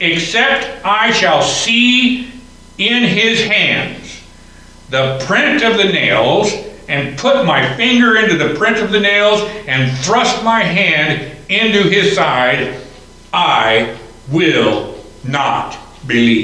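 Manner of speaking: slow, deliberate, each phrase drawn out. Preacher reading Thomas's words from verse 25 in a morning message: said slowly. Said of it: "I said that slowly".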